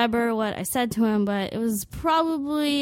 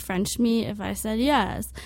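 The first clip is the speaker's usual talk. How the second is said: normal talking voice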